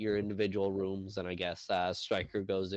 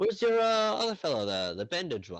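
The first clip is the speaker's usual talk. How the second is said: very high, loud, swooping bartender character voice; 10 semitones higher, 6 dB louder than usual. Voicing the bartender handing out room keys: voicing the bartender. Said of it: "holds a fifth key and he goes".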